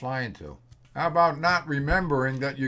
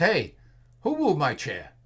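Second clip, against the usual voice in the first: loud, exclaimed. Telling a joke about missing your chair at lunch, say it in a loud voice. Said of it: "you claim in a loud voice".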